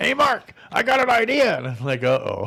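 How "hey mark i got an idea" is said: very high-pitched, slow, unhurried voice. Retelling a phone call in which he greets Mark, do a Donald Williamson impression. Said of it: "this is my Donald Williamson impression".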